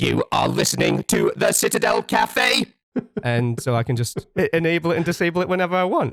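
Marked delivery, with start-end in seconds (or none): 0.0-2.7 processed robot voice effect, like a machine. Showing listeners the microphone button that turns their voice into a Dalek voice. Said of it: "it suddenly becomes".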